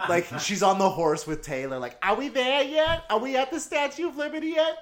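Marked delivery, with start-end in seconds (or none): 2.0-4.8 put-on very high, grating, annoying girl voice. Speaker imagines a girl named Nora riding with Taylor; annoying Nora voice.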